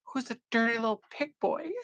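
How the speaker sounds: tiny, squeaky, high-pitched little voice. Laughing about a story, recalling what someone said: Karen's squeaky little voice. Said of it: "And Karen's squeaky little voice".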